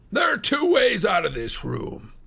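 savage, threatening, very high, loud cry. A narrator reads ferrier's words to his two young visitors: crying out. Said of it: "cried Ferrier".

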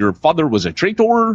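put-on Northern English accent, pitched high. Explaining the original Darth Vader actor, the speaker voices his line in David Prowse's North Country accent. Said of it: "he has a North Country accent, so he's like".

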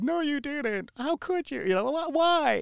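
mock upset crying. Acting out how she mocks the speaker's crying over a gift, imitating upset crying. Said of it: "sounds like upset".

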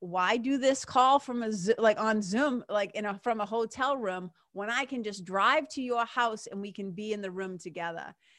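usual speaking voice

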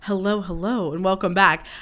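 weird infomercial host delivery, late-night phone commercial style. Podcaster mimics how her own early-morning intro sounded: late-night phone commercial voice. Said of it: "It sounds like I'm on like a late night weird phone commercial".

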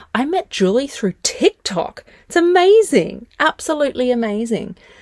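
audibly thrilled voice. Host introduces an interview guest met through tiktok, excited. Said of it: "you can probably hear the excitement in my voice".

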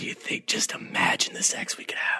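put-on whisper. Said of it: "I just wish Lee whispered in her ear".

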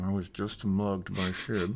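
muffled, muted, soft and slow speech. Retelling what a guy said to his mom, in a muffled voice. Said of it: "like muffled".

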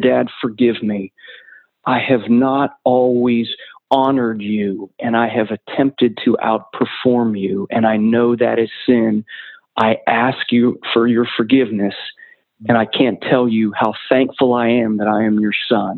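choked-up voice catching with emotion. Recounting what he told his father in a hospice bed, choking up. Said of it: "I'm choking up even now sharing this story".

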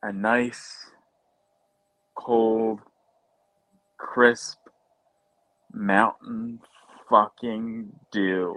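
deliberately slow, low delivery, every word stretched. Speaker names what they could go for right now: slowed down. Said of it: "That's why I slowed it down".

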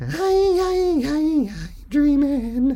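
very high, drawn-out falsetto voice.

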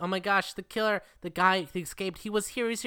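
mock frantic, alarmed cry, high and rushed. Retelling a movie scene where she says the killer escaped: imitating a panicked woman. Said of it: "where she's like".

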